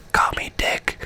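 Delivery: leaned-in, barely voiced, hushed whisper. Retelling how he leaned in to Jean's ear, imitating a whisper. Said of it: "he just leans in and whispers into Jean's ear".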